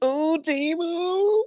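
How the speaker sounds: very high pitch, stretched out. Retelling a call of a catch in a Tony Romo voice. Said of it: "I had my Tony Romo voice going".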